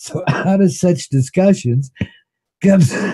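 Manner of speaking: laughing mid-sentence. Breaking off mid-explanation, laughing so hard it hurts, laughing hard. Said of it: "I'm laughing so hard it hurts".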